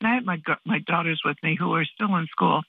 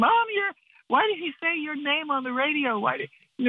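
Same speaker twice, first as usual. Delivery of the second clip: mock excited screaming, much higher and faster; 10 semitones higher than usual. A mother retells her daughters hearing her name on the radio, imitating them screaming excitedly. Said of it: "they started screaming".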